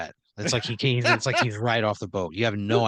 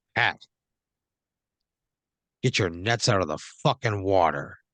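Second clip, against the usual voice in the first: terse, curt, brusque, formal military voice; 3 semitones lower than usual. Narrator voicing a man who locks eyes with Pat: terse formal military voice. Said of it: "You can tell he's probably a little terse".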